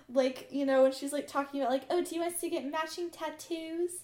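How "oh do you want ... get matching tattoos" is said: badly faked Australian accent. Retelling what Abigail said in the episode: imitating Abigail, Australian accent. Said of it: "I can't do an Australian accent either".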